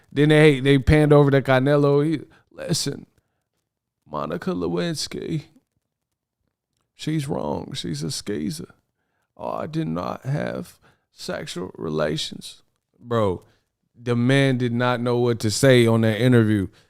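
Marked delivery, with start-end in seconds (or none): 2.5-12.6 trembling, shaky, breathy, nearly whispered voice. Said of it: "He had the shake voice like Bill".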